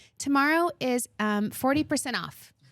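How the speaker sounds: chirpy, high-pitched put-on TV weatherman voice. Retelling a man doing the weather on the show, in a high-pitched voice. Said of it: "with that like high pitched voice".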